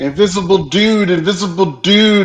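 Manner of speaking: shouting. Voicing own character pointing at the invisible dude: yelling. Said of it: "And I'm yelling".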